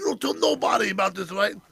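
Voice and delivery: fuming, angry, mad, heated delivery. Retelling a coworker's words after he was scammed: imitating someone mad. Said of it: "he was so fucking mad".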